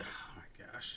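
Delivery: soft, unvoiced, dismayed whisper.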